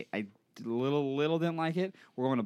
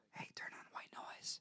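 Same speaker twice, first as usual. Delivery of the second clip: hushed, very quiet, breathy whisper. Retelling whispering a command to a smart speaker: imitating own whisper. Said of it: "whisper, like".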